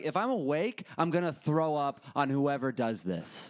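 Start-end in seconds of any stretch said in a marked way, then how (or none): none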